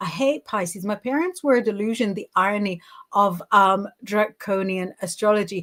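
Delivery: normal talking voice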